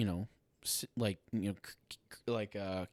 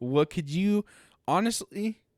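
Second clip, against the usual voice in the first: very high, loud voice, breaking and cracking; 10 semitones higher, 7 dB louder than usual. On a podcast, imagining a caller from the future: voice cracking. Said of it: "my voice cracked there".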